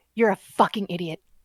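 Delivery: hushed half-whisper, very close as if into ear. Calling someone over to half-whisper in their ear, half-whispering. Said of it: "I'm going to whisper in your ear".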